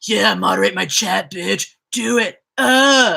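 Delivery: deliberately terrible rasp, slow and drawn out. Joking about a viewer's request to be modded: horrible impression of a super chat donor. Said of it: "a really horrible impression of somebody who just gave me a super chat".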